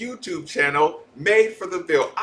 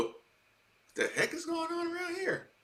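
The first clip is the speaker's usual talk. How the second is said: raspy, soft, high, quick voice; 10 semitones higher, 12 dB quieter than usual. Retelling a commercial, quoting Lamar Jackson: raspy gentle Lamar Jackson voice. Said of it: "in his raspy Gentile voice go".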